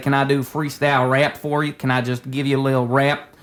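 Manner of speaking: put-on Southern accent with drawl. Retelling a prank on TikTok live strangers: put-on southern accent. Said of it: "talking to them like this for a while".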